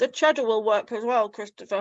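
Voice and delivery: words pushed out through food while chewing. Sharing homemade empanadas, the speaker talks to christopher while talking with mouth full. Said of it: "speaking with my mouth full".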